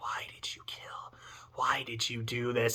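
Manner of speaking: hushed, whispered, eerie ghost voice. Describing what you sometimes hear, acting out ghosts whispering: ghost whisper. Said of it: "you can hear ghosts actively whispering".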